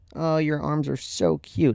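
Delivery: snide, teasing sarcasm. Retelling a remark from the father: imitating a sarcastic remark. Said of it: "he's being sarcastic".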